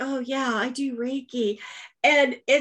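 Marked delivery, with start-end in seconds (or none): 0.0-1.6 hushed, very drawn-out, slow stage whisper. Retelling what the other speaker said before recording: imitating a half-whisper. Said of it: "you had to, like, whisper".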